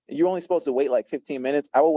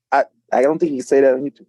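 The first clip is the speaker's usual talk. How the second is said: ordinary talk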